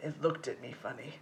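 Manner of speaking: acted dead-flat mutter, very low and soft. Retelling a boy's answer in ceramics class, imitating his deadpan reply. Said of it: "he turned deadpan and went".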